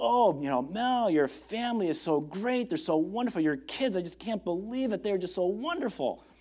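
gushing, enthusiastic delivery. Speaker recalling a man who always complimented them, imitating enthusiastic, confident praise. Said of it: "he would say it with so much enthusiasm and confidence".

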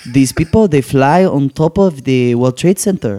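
imitated Israeli accent. Retelling what a friend's mom said: imitating an Israeli accent. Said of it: "She had an Israeli accent".

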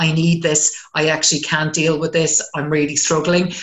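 normal talking voice

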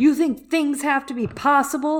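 high, loud, furious angry outburst. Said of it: "And he's like".

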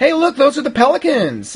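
put-on excited, high, wide-pitched kid voice.

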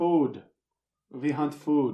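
put-on loud, ambiguous Eastern European accent. Role-play, a strange woman leading the party to hunt: vague eastern european accent. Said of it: "Still ambiguously Eastern European".

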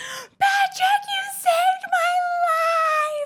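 put-on shrill, very high, drawn-out scream. Speaker re-enacts what they shouted while lifted in the air: retelling a scream. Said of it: "I'm screaming this".

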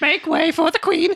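very high, herald-style announcing voice. Acting out a made-up mole rat scene: voicing the other mole rats. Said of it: "and everyone's like".

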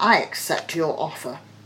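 ordinary delivery

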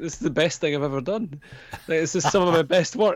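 high, teary blubbering, crying through the words. Retelling a comic where the author edits videotapes, imitating someone crying. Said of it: "crying as he's doing it".

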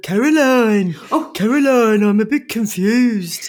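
put-on Birmingham accent with Brummie vowels. Retelling how a man from the speaker's workplace used to ring up, in a Birmingham accent. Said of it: "It was from Birmingham".

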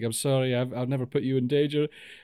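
acted apologetic, pleading tone. Retelling a film scene where a character confesses: imitating an apologetic plea. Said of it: "she's so apologetic".

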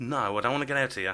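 ordinary talk

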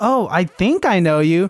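slow, casual, nonchalant brush-off tone. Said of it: "He tried to play it off so nonchalant".

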